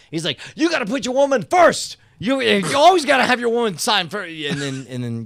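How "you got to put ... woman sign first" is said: very high, shrill, furious, raised yelling. Retelling an autograph signing, imitating an angry Mister T. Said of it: "he got super mad".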